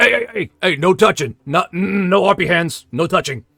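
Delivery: put-on high-pitched old man voice. Narrating, the speaker voices the old man as a player reaches for the sticks: old man voice. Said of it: "the old man goes".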